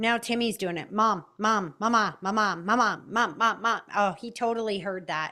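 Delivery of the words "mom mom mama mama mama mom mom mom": slow, drawn-out, repetitive calling out. Acting out a child repeating calls for mom: Family Guy "mom, mom" bit. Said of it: "you guys watch Family Guy".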